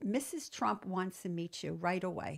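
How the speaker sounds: ordinary talk, nothing marked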